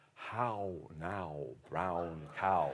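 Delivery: deep, very slow posh English accent, stretched vowels. Showing how you practise keeping your English accent every morning, trying to sound like Prince Charles. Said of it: "I'm trying to sound like Prince Charles".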